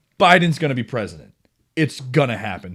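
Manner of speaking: plain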